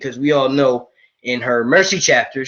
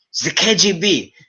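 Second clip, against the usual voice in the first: put-on German accent, drawn way out, slow and deliberate; 5 semitones higher than usual. Retelling a scene where Dwight answers Michael's knock, Dwight in a German accent. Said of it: "I know I'm doing a German accent".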